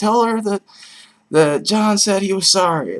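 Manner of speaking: very high, whiny tone. Describing a Die Hard phone scene, the speaker is imitating whiny Bruce Willis. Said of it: "he gets like really whiny sounding".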